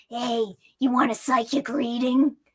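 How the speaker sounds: rough, hoarse, very raspy voice. Retelling what an aggressive psychic said to the speaker, raspy voice. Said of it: "speaks to me in the most raspy voice ever".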